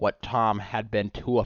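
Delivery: plain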